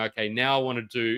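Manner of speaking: usual speaking voice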